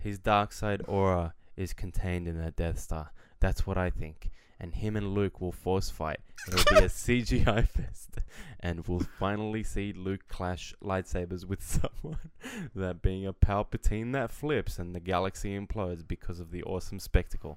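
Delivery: utterly earnest, solemn, grave, dead serious reading. Reading a text aloud as asked, as serious as possible. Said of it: "Now read this as serious as you can".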